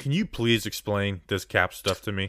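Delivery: plain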